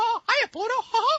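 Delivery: high cartoon mouse voice. Asked about his skill, a voice actor shows off a Mickey Mouse voice. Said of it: "I can do voices like Mickey Mouse".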